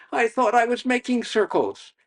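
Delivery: puzzled voice, high-pitched and loud.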